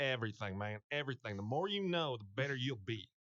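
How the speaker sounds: repeated word pressed, like a veteran. Retelling what a teammate told him in meetings: imitating Randy Moss. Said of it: "That's not a bad Randy".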